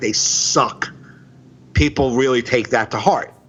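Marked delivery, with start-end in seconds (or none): 0.0-0.9 harsh, cutting, blunt, dismissive tone. Showing how saying it too harsh turns a crowd off: harsh, blunt. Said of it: "if I say it too harsh".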